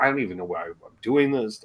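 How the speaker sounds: put-on under-breath grumbling. Retelling a line from Monster Chiller Horror Theater: imitating muttering under breath. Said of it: "the mutterings under his breath".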